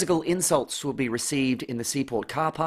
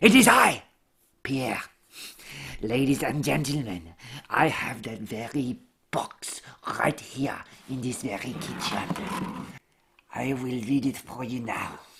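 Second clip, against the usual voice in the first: exaggerated French accent. Sketch character naming who can translate the French instructions, in Pierre's Frenchiest French accent. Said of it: "only the Frenchiest Frenchman could translate".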